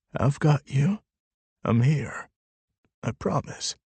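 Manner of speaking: trembling, shaky half-whisper. Narrator holds her tightly and reassures her in her ear, in a shaky half-whisper. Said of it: "letting my own voice shake as I whisper".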